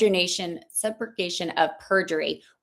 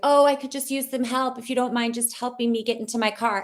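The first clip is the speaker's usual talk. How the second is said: higher, fake-injured, pleading tone; 5 semitones higher than usual. Retelling how Ted Bundy played injured to ask for help: imitating Ted Bundy feigning injury. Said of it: "play, like, the injured".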